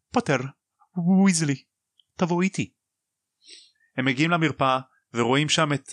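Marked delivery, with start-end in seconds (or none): 0.1-2.7 high, quavering, unsteady, trembling delivery. Recapping the story, voicing a character summoning two others: trembling voice. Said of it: "היא אומרת בקול רועד".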